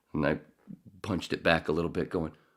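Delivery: ordinary talk, nothing marked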